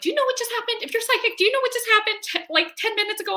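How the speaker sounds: high, urgent, frantic pleading tone.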